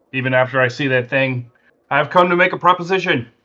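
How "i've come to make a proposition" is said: high, herald-style proclaiming announcement. Stepping into the room and announcing to whoever is there: loud announcing voice. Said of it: "I announce in a really loud voice".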